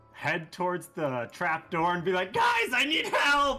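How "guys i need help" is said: very high, loud shout like a rat creature. A player calling for help at a trap door, in her Skaven voice. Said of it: "in her new Skaven voice".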